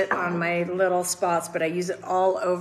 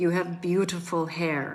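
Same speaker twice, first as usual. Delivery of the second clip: put-on broken French-accented English, quieter; 5 dB quieter than usual. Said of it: "in her broken French".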